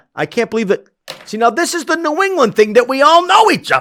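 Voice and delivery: very high, loud game-show-host style holler. Finding out in conversation that they all know each other: yelling. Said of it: "why am I yelling like Regis?".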